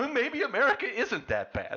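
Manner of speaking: mock, very high, cartoonish, swooping fake sobbing. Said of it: "That was supposed to be me crying".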